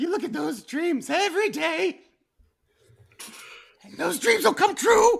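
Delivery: very high warble, on the brink of tears. Mocking a motivational speaker's platitudes: warbly near-crying imitation. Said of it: "Why is he so warbly?".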